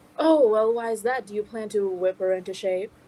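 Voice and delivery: playfully needling, cheeky teasing tone. Voicing Dick questioning a contestant who carries a whip: cheeky as Dick. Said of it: "looks at you a little cheekily and says".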